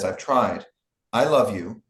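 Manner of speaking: mock, strangely remote, odd, distant, detached delivery. Retelling how an actress said a line in the movie: imitating Anna Ferguson's odd, distant delivery. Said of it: "a very odd, kind of distant way of saying it".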